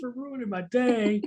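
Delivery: acted fed-up yell. Confirming what was yelled at the driver: imitating his own yell. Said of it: "did you yell".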